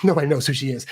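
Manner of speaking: play-acted amused, chuckly, light laughing tone. Analyzing the delivery of a line about an author, laughing, light delivery. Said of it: "That's giving off a laughing vibe".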